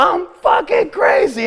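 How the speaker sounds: piercing, very high-pitched, shrill screaming. Recounting flipping out at a man on a motorcycle, retelling a scream. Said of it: "I'm screaming".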